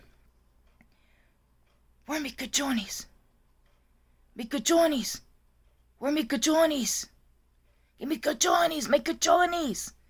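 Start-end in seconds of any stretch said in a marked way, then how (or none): 2.1-9.9 put-on high old woman's yell in Spanish. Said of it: "She's yelling".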